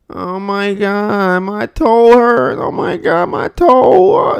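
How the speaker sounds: very slow, high, loud, drawn-out complaining whine. Demonstrating to an audience how tone changes meaning, whining about a stubbed toe. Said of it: "complaining and whining".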